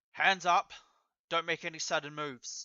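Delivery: voice sounding like it is over a loudspeaker. In a role-play, a spotlight lands on the traveler and a voice calls out like a loudspeaker. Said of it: "a voice over like a loudspeaker".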